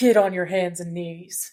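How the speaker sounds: deep voice, sunk way down. Retelling how low John's voice went on a line: imitating John's deep voice drop. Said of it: "the depths of which his voice just went".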